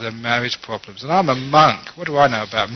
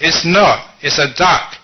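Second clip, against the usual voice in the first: firm, raised, high-pitched voice, words drawn out; 5 semitones higher, 5 dB louder than usual. Retelling a wife arguing back with her husband: imitating a raised voice. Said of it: "the wife raised her voice".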